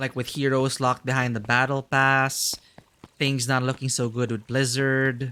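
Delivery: ordinary delivery, nothing marked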